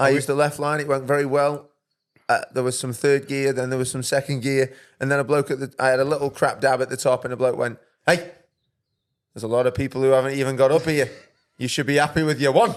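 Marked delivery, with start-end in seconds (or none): 8.1-12.7 put-on stern, firm Scottish accent. Retelling what a bloke at the top said: imitating a firm Scottish tone. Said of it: "Was it in a firm Scottish tone like that?".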